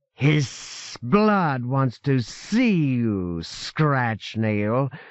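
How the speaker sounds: thin, hissing, sibilant mocking tone, very drawn out. A shape in a grotto answers an angry demand, in a thin, sibilant, mocking voice. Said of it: "the thin voice said, sibilant and mocking".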